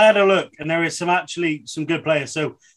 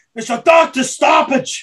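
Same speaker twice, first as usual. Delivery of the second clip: mock high, drawn-out, stretched holler; 9 semitones higher, 4 dB louder than usual. Retelling shouting at the missus while sat on the floor: imitating own shout. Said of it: "I'm just shouting at her".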